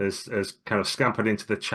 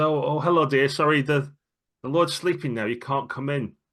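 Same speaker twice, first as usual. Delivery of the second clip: acted, gentle elderly woman voice with raised pitch; 5 semitones higher than usual. Narrator voicing the elderly maid Dorothy speaking to the players, elderly maid Dorothy voice. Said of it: "she gets up and turns to you and says".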